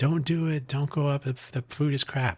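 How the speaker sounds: mock yelling. Retelling a vlogger yelling a warning at a tourist group: imitating someone yelling. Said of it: "he's yelling at them".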